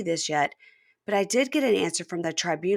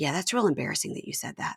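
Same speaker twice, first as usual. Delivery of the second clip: imitated muttering under the breath; 3 semitones lower, 4 dB quieter than usual. Retelling what a woman muttered on a show: imitating muttering under breath. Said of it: "under her breath goes".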